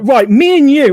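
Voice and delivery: acted-out angry voice. Retelling a pissed-off boyfriend threatening the sock puppet: imitating an angry boyfriend. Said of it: "getting really pissed off".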